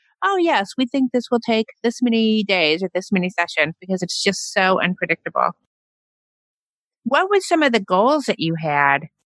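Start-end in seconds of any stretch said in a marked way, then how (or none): none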